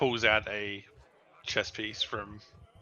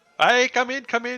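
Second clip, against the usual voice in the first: shrill, very high, very loud dwarf voice; 13 semitones higher, 9 dB louder than usual. Voicing a little dwarf inviting a visitor into his shop: dwarf character voice. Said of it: "You see this little dwarf".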